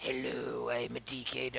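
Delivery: very low, soft, slow guttural rumble. Retelling a sudden voice that silenced everyone, in a really low guttural voice. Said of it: "this really low, deep, guttural voice".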